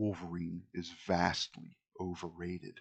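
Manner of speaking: grave, very solemn, slow delivery. Voicing a kid character who looks at a player: solemn voice. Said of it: "He looks at you very solemnly and he says".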